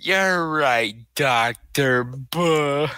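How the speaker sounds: mooing, cow-like voice. Riffing on a movie scene, replying in a cow-like voice. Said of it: "You sound like a cow".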